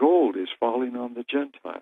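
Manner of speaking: low, indistinct mumble, half to himself. Retelling a man walking away after saying he must go: imitating mumbling. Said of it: "away he goes mumbling".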